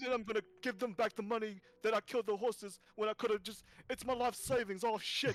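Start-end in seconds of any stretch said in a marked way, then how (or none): 0.0-3.6 play-acted, fast, derisive taunting. Mocking another person in character, mocking someone. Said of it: "I'm mocking him".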